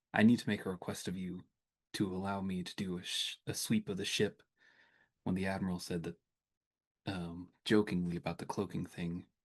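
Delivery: muttered under the breath. Marching back to the Mariposa, the character pulls a companion slightly back: under the breath. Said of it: "under my breath I'll say".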